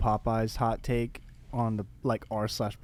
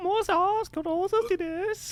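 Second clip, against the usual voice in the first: put-on influencer voice speaking Spanish, pitched higher. Asked for it, speaking Spanish: James Charles voice in Spanish. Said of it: "speak Spanish in your James Charles voice".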